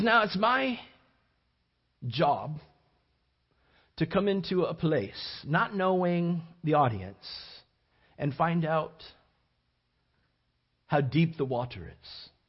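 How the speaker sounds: put-on, heavy European accent. Retelling what a visitor said at the Bible College, A.E. Wilder Smith's European accent. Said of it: "That's my European accent".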